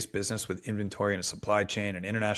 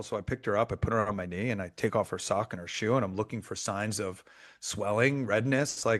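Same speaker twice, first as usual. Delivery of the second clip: ordinary talk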